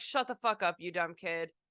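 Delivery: ordinary talk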